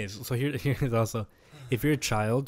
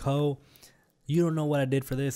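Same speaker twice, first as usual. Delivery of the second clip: mock scream, higher; 4 semitones higher than usual. Retelling what someone shouted on a live stream: imitating someone screaming. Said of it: "she started screaming, like".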